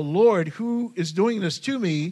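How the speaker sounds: acted, unhurried, slow, drawn-out crying out. Retelling a blinded man on the road: imitating someone crying out. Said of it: "now he's crying out".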